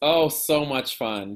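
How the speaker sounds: heavy, pointed, completely sarcastic irony. Answering a question about elementary schools, sarcastic. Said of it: "Completely being sarcastic".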